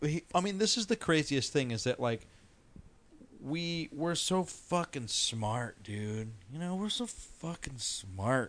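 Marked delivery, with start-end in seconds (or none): 3.9-8.5 dry, sarcastic complimenting tone. Talking about dreams and the brain with friends: sarcastic. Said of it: "are you being sarcastic?".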